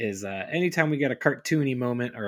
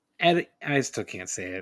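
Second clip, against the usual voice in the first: ordinary delivery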